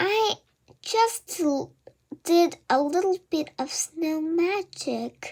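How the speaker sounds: tiny, shrunken, small, high little voice. The narrator answers Mom, Dad and Aunt Crystal at the bedroom door, in a small voice. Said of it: "I said in a small voice".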